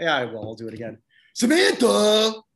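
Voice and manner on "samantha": loud, high-pitched exclaimed word, belted out. Doing an impression on a show, calling out names: Tony Danza impression. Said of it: "my Tony Danza impression".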